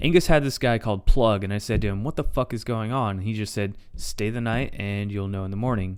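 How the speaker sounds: ordinary delivery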